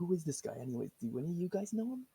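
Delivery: high-pitched half-whispered voice. Asking the party about the bear guy in character: half-whisper. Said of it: "I'd kinda whisper".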